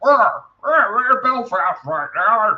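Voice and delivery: very high puppet-frog voice. Right after saying he can't do it, attempting a Kermit voice. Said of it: "that was my attempt at a, an impersonation".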